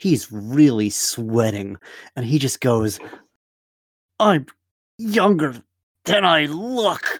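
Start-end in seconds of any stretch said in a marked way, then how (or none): 4.2-7.2 strained, higher pitch, forced out through clenched teeth. Voicing a tense man who leans in to Craw: through gritted teeth. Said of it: "through his gritted teeth".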